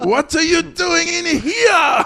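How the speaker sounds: high, slow, shouted, bad fake Japanese accent.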